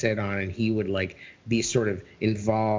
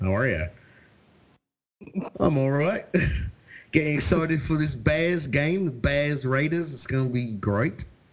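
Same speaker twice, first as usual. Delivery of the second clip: put-on accent slipping into Australian, higher; 5 semitones higher than usual. Greeting a friend on the show: put-on accent slipping into Australian. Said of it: "Now I'm slipping into, like, Australian".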